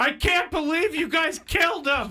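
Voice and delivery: acted-out yelling. Retelling yelling at parents over the missing dogs: imitating someone yelling. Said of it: "I started yelling at my parents".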